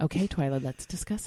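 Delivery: put-on, proper, respectable lady voice.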